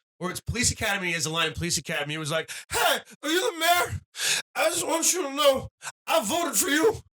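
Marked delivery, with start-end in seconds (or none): 2.7-7.0 very high-pitched, squeaky, blurted comedy-movie character voice. Doing a line from Police Academy: Bobcat Goldthwait voice. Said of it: "That's Bobcat Goldthwait".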